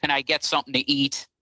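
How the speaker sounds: usual speaking voice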